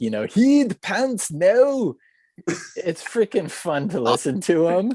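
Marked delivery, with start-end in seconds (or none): 0.2-1.9 put-on Scottish accent, relaxed and pitched up. Describing a YouTuber's accent, imitating Candyman's Scottish accent. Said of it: "He's got the rad Scottish accent".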